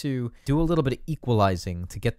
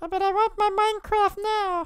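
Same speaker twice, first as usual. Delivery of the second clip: put-on whining tantrum child voice, higher. Acting out a child throwing a tantrum over games: put-on tantrum child voice. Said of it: "which just sounds like a tantrum child".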